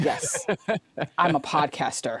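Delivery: slow, solemn, earnest, dead-serious voice. Retelling meeting a podcaster, imitating him: imitating a serious man. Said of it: "he was so serious".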